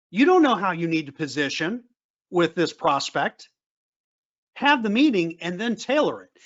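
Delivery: plain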